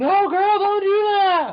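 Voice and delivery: shrill, very high, slow, drawn-out yell. Retelling how moviegoers behaved during the film: imitating someone yelling at a movie. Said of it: "they were yelling at the movie".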